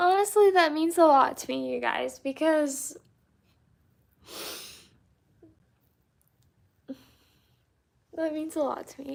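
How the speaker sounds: high-pitched, tearful voice, crying through words. Speaking to viewers as 'you guys': crying while talking. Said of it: "I'm sorry I'm crying".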